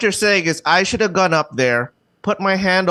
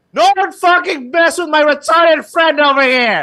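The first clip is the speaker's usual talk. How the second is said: put-on, high-pitched, loud yelling; 8 semitones higher, 5 dB louder than usual. Retelling what a friend yelled at everyone after an event: imitating someone yelling. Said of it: "He yells out to everyone".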